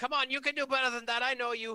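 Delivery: rallying, encouraging cheer. Yelling to Raya in character during a fight: in-character yell of encouragement. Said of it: "I'm gonna yell out to Raya and say".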